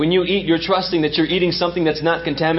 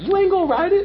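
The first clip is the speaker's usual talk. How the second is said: much higher, laughing voice impression. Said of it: "That's how he say it".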